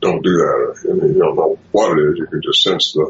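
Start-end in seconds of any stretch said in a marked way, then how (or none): 0.0-0.9 acted-out stern, scolding tone. Retelling how one of them came down on the small one: imitating a big scolding voice. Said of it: "coming down on the small one with a big voice".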